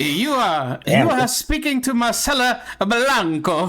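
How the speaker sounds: silly, high-pitched, slow, exaggerated accented voice. Voicing a pirate queen speaking to the players: Marcela Blanca silly accented voice. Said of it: "my silly voices".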